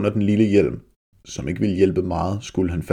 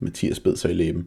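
plain

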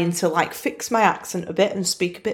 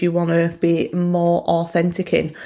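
plain

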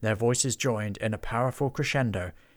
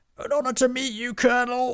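very high, loud shouting; 14 semitones higher, 4 dB louder than usual. He greets the colonel through the snail's ear, shouted. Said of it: "he shouted into the snail's ear".

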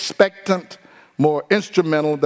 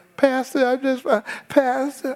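mock timid, wimpy man voice, higher pitch; 10 semitones higher than usual. Mocking a man who comes to the pastor: imitating a wimpy man. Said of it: "if you're a wimpy man".

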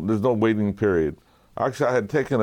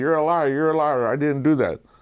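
loud yelling, pitched higher; 5 semitones higher than usual. Retelling what an old driver said after a crash: imitating someone yelling. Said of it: "he's yelling at, yelling at me".

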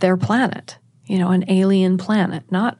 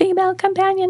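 very high, staccato, scratchy, monotone alien voice; 12 semitones higher than usual. Recounting waking to an alien calling her, in a high-pitched monotone alien voice. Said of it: "alien voice calling me female companion in this high-pitched voice".

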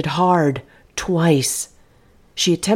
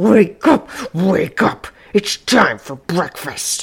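very slow, labored, choked speech, throat sounding blocked. Narrator reads the intruder waking Faye, speaking as if something lodged in his throat. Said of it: "He was wearing her spring party dress and the fancy blue lady's hat that she kept on the coat rack in her room. It had been her mother's. The intruder smiled and revealed several missing teeth and an enormous mouth. ... He seemed to be speaking with great difficulty, as though he had something lodge".

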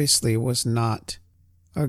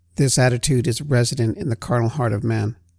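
ordinary talk

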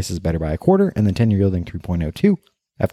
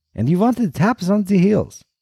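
put-on strong Eastern European accent, very high; 12 semitones higher than usual. Storyteller voicing Mr. Klonsky questioning Kaplan about his shoes, Mr. Klonsky's Eastern European accent. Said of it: "in his strong Eastern European accent asks".

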